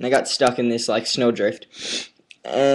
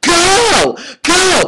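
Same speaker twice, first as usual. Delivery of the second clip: mock scream, higher and louder; 8 semitones higher than usual. Retelling a road-rage incident, acting out what the other driver shouted, imitating her screaming. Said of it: "started screaming at her".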